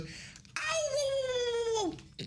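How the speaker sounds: very high, drawn-out cartoon yelps on whoa. Showing what the Mario character says when hurt: Mario voice. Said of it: "what's Mario? Oh, he goes".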